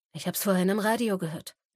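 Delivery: ordinary delivery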